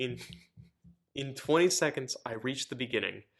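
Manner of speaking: words broken up by laughing throughout. Someone reading a story aloud, laughing while reading. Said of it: "I'm laughing because my legs feel really funky".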